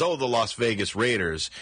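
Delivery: normal talking voice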